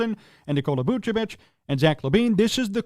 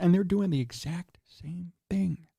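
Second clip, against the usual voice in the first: mock-secret hushed whisper, much quieter; 5 dB quieter than usual. Commentator criticizing the Bulls front office, mock-secret whisper. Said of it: "I'm whispering because it's a secret".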